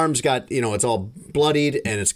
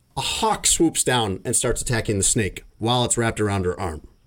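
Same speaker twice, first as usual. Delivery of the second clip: normal talking voice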